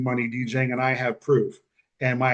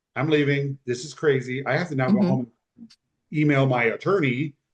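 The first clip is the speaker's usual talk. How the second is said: plain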